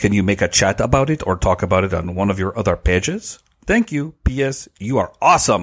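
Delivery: English spoken with a put-on French accent. Reading a question letter aloud to another speaker: French accent. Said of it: "I'm going to be using a French accent".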